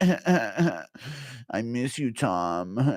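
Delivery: fake drunken voice, slow. Acting out Jones accidentally going live while drunk, do a drunk Jones impression.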